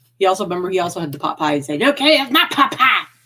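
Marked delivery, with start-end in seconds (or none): 1.8-3.0 clumsy, high-pitched cartoon voice. Retelling what Jacob said about the pot pie, as a bad Cartman impression. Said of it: "we're not very good at, um, impressions".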